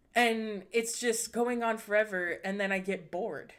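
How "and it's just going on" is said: plain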